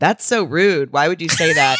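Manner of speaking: normal talking voice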